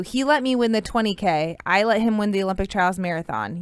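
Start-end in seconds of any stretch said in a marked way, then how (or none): none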